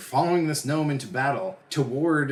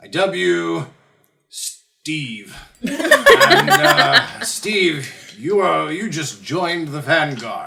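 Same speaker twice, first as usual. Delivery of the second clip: put-on very loud, slow, sloppy drunken slurring; 5 semitones higher, 10 dB louder than usual. Game master voicing a captain welcoming a new recruit, drunk, slurring. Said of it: "he's obviously slurring and, and very loaded".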